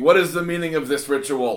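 loud, screamed, in-character voice. Playing a character who shoves a burning follower at the altar: screaming in character.

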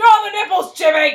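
furious, very loud and very high shrill yell. Retelling a scene where a woman yells at Jimmy, in a mock-angry yell. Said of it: "You have to say it way more angry".

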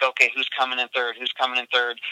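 ordinary delivery

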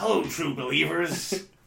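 rasping, showman-style put-on voice. Asked to read out a comic panel, try a greeting first in a Stan Lee voice. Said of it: "I haven't done a Stan Lee voice".

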